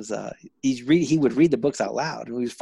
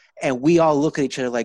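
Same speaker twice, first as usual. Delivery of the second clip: ordinary talk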